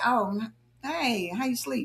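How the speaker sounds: cold, dry, slow and soft delivery.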